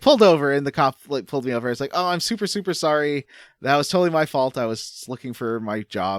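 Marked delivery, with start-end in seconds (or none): none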